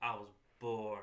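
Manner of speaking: expressionless, even delivery. Mocking an actor's bad line delivery: imitating Ronda Rousey's monotone delivery. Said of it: "monotone and read their lines like this".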